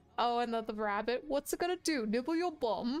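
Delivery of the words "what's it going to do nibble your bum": badly done, terrible fake British accent. Describing very English humor from childhood, in a terrible British accent. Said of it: "sorry for the terrible British accent".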